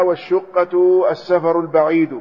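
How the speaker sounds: ordinary talk, nothing marked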